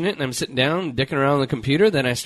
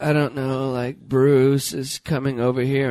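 put-on bored reality-star voice. Retelling a reality show moment: imitating a bored Kardashian voice. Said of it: "this voice that they do".

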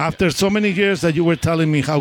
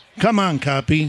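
normal talking voice

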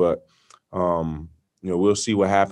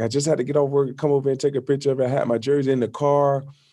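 put-on British accent, pitched up; 7 semitones higher than usual. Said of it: "his British accent".

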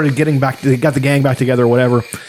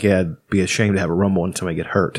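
very low, soft, quiet deadpan; 7 semitones lower, 6 dB quieter than usual. Retelling a line from an episode, imitating Newhart's deadpan. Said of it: "Newhart is delivering that fucking deadpan".

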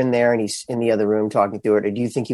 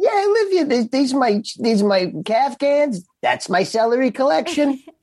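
fake New Jersey accent, higher. Answering in character whether he lives in the rv: put-on new jersey accent. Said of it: "in your accent".

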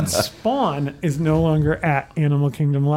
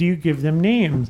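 usual speaking voice

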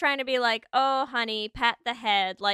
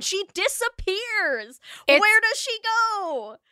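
upset, high-pitched, loud screaming; 9 semitones higher than usual. Speaker upset about a character vanishing, screaming into the microphone. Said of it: "me screaming into my microphone".

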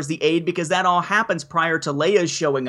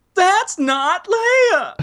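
very high, drawn-out, stretched delivery; 13 semitones higher, 4 dB louder than usual. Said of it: "I need a [name]'s That's Not Leia".

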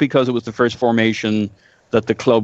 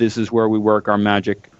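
plain

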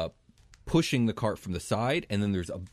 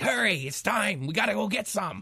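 shrill, very high, goblin-like creature voice; 12 semitones higher than usual. Narrating a game, voicing unseen figures pushing a cart closer; goblin-like voices. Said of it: "these almost goblin-esque voices like".

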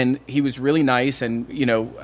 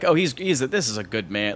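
ordinary talk

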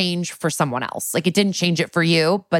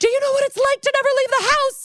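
put-on, very high, full-meltdown shriek. Retelling Lois's meltdown at Jennifer: imitating someone screaming in a meltdown. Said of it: "a full meltdown screaming at Jennifer".

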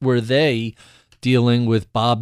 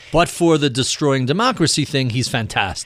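plain

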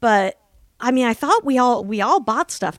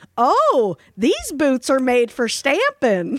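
put-on loud Texas accent. Retelling a post office visit: imitating a loud texas accent. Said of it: "loudest Texas accent I've ever heard".

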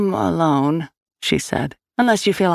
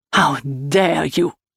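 words spat out in a hiss. Narrator reading a man's reply to an accusation, hissed. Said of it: "Povel hissed".

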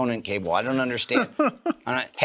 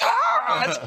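very high mock scream of outrage. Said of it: "people right now screaming at this podcast".

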